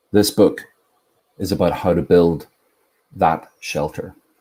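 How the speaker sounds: commanding, authoritative, guru-like reading delivery. Reading a passage from a book aloud, in an authoritative reading voice. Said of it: "Very authoritative, very guru-like".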